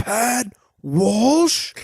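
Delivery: mock high, booming shout. Retelling a stranger calling out from across the bar, retelling a booming call. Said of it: "hear a booming voice go".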